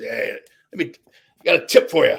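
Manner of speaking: gruff, rough-edged put-on voice. Retelling what another performer said to him after a show, in a gruff voice. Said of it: "he had this gruff voice".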